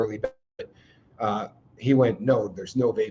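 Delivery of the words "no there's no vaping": put-on stern, low, dead-serious, no-joke voice. Retelling a doctor's answer to a vaping joke, imitating his very serious tone. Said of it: "he said it so seriously".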